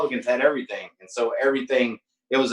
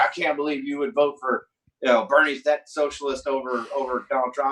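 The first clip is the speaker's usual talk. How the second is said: ordinary talk, nothing marked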